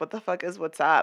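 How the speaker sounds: plain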